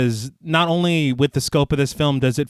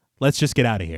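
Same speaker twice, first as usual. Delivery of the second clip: mock-calm voice, much lower and quieter; 4 semitones lower, 3 dB quieter than usual. Retelling what Shane said while they were running away: imitating Shane's calm tone. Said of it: "Shane says in this tone of voice".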